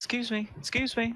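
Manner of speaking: very high elf woman's voice, calling out. Narrating a game scene as an elf woman calls out to the players, in an elven woman voice. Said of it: "Elven woman voice".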